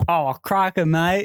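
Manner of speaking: clowned, clumsy, bad fake Australian accent. Taking a turn after the other speaker, trying the phrase in a put-on Australian accent. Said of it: "were clowning my Australian accent so bad".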